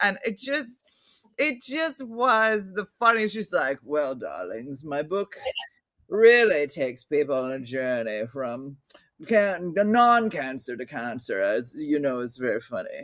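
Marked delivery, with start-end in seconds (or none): 3.8-13.0 lofty, very deep, grandiose voice. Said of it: "did a great job in her smoking jacket".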